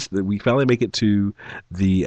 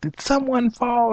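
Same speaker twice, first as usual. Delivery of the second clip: very high, loud yelled shout. Retelling a loud crash and calling up the stairs: retelling a yell. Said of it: "And I'm yelling".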